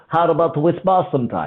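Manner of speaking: imitated Russian accent. Retelling what a russian man said on walking over: imitating a russian accent. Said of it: "I can tell you've been working on that accent".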